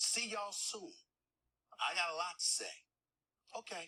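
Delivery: sassy, showy tone. Signing off at the end of a podcast announcement: sassy. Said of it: "how sassy he got at the end".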